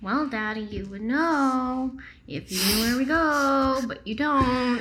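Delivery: slow, very sad, sorrowful, with "go" drawn out. Voicing a daughter answering her father's question, very sadly. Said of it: "Hilda very sadly says".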